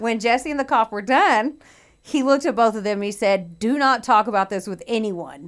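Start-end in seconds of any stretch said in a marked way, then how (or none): 3.6-5.5 put-on hostile, aggressive, irritated pissy tone. Retelling a police officer's order to keep quiet: imitating someone aggressive and pissy. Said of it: "all aggressive and pissy".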